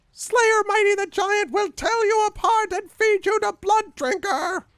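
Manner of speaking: very high, very loud, furious raging screech. Game master voicing a goblin-sized creature charging at the players, shrieking in fury. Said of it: "it shrieks in fury".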